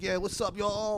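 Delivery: little, light put-on twang. Imitating the barbershop owner greeting them: Ronnie Lordy little twang. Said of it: "he does this little twang".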